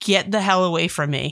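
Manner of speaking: ordinary talk, nothing marked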